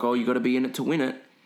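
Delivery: put-on thick Polish accent. Retelling what a woman selling raffle tickets said, in a thick Polish accent. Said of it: "with a thick like Polly accent".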